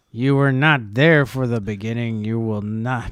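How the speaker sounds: very loud, belted put-on voice. Asked about an impression, showing how Burroughs talks: Burroughs impression. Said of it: "he talks like this".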